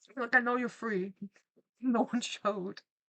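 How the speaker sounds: words broken up by laughter. Mid-joke, the speaker keeps talking while laughing. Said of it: "Sorry, I'm laughing".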